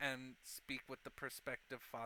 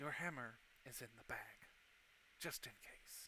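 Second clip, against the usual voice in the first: soft whisper, close to the ear; 3 semitones lower, 8 dB quieter than usual. Voicing a character who leans in close to a departing guest: whispering. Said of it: "he leans in and whispers".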